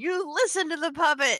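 full-on loud yell. Recounting what they shouted at someone about the puppet: retelling a yell. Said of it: "so I'm yelling at Hobgoblin 3 going".

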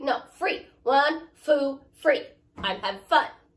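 put-on loud toddler voice. Retelling answering customers at the lunch meat counter: talking like a three-year-old. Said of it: "talk like a three-year-old".

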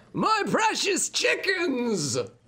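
piercing, shrill, very high yell. Game master voices someone yelling from inside the sanctum, yelling from inside. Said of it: "you hear a voice yelling from the inside".

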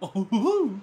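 high, silly cartoon hoo-hoo laugh. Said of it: "that's the one goofy laugh I can't do very well".

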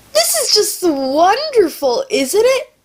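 sarcastic high cheer. Sick speaker introducing their video to viewers, sarcastic. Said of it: "Of course I'm being sarcastic".

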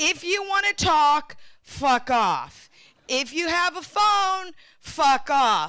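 put-on passive-aggressive voice. Retelling how a remark was just made, in a mock passive-aggressive voice. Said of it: "a bit of a passive aggressive cunty voice".

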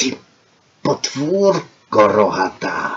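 low, soft, hushed hiss. Narrator reads Hunkler answering Anna, in Hunkler's hissing voice.

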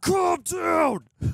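high, loud mock shout.

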